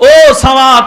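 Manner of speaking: high, loud scolding shout.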